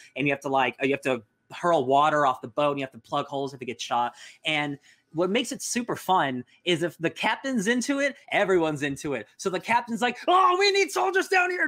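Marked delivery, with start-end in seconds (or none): 10.3-11.7 mock yelling, put on, much higher pitch. Describing an online ship game, the speaker retells a captain's yell. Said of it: "And he's just yelling".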